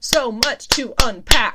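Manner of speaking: loud, slow, excited outburst. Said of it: "Sorry, that was loud".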